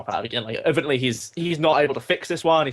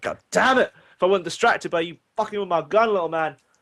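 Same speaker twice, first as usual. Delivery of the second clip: irritated, angry swearing outburst; 4 semitones higher than usual. Narrator voices a man who lost his pistols, cursing. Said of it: "and he's like cursing".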